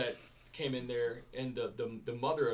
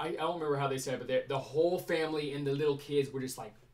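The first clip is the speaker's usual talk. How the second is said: ordinary talk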